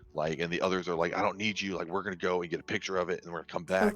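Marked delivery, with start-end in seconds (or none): 1.1-3.9 put-on aggressive, angry whisper. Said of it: "whispering, like, aggressively towards each other".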